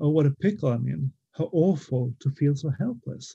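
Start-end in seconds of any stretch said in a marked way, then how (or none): none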